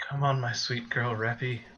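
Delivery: whispered voice. Whispering to a raptor mount in character after being asked to: whisper. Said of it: "You have to whisper it too".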